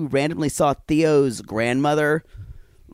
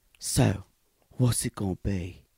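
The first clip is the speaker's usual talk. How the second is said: slow, terrible put-on Australian drawl; 7 semitones lower, 6 dB quieter than usual. Imitating an actor's swagger talking to Sabrina: terrible Australian accent impression. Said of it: "That's my terrible, it's no more Australian".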